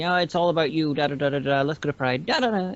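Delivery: ordinary talk, nothing marked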